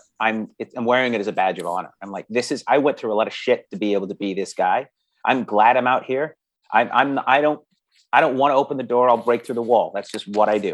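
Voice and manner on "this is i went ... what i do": usual speaking voice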